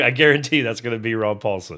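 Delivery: ordinary talk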